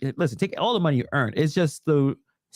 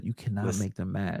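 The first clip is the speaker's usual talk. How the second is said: hushed, secretive half-whisper under the breath; 8 semitones lower, 8 dB quieter than usual. Warning another speaker about the topic, half-whispering. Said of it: "I'm gonna whisper it".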